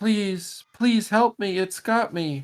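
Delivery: very high-pitched woman's voice, calling out. Narrator voicing a woman heard calling out again: woman's voice calling out. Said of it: "you hear a woman's voice call out again".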